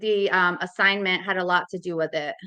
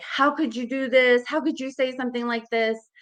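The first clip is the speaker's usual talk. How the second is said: raised pitch, disbelieving, scolding yell; 5 semitones higher than usual. Parent recounting what they yelled at their son, retelling yelling at son. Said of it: "I just start yelling at him".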